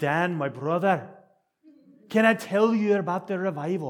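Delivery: put-on very loud, high-pitched Welsh accent. Retelling what a man in Seymour says to him, imitating Howell's Welsh accent. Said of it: "He speaks with that accent".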